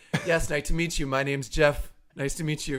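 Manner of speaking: acted, stiff, lifeless deadpan monotone, very soft. Retelling meeting other parents who expect a joke, in mock wooden, laconic delivery. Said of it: "the most laconic and wooden".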